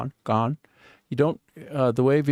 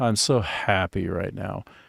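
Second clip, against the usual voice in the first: sarcastic, ironic, joyless mock-happy tone; 3 semitones lower than usual. Showing irony on 'I'm so happy right now', ironic, not sounding happy. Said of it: "that was irony, right? That when I said that, it doesn't sound like I'm happy".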